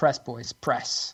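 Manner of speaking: low, hushed, urgent encouraging tone.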